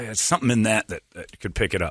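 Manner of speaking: normal talking voice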